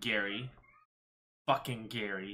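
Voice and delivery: slightly disdainful, dismissive tone. Talking about a character named Gary, saying the name with slight disdain. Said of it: "bit of disdain".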